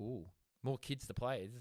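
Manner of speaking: plain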